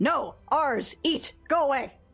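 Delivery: chorus of high, slow rat voices. Game master voicing the glaring rats' telepathic message to the player, telepathic rat voices. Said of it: "lots of telepathic voices saying".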